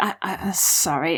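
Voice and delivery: slow, halting, hushed whisper. Voicing a character apologizing before walking out: whispering in character. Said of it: "and I whisper".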